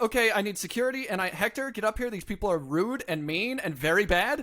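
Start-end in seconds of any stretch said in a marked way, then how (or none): none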